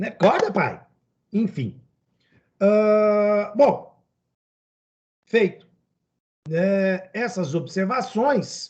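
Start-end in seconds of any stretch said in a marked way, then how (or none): 0.1-0.8 urgent, insistent, urging tone. Retelling how the daughter claps and wakes her dad: imitating Isadora urging dad awake. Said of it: "ela bate palminha e fala assim".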